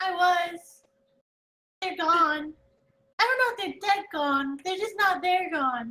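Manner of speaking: playful, birdlike character voice. Speaking as a bird familiar, replying to a companion, bird familiar voice. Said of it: "[name] kind of turns his head like side to side like birds do and goes, / [name] kind of turns his head like side to side like birds do and goes".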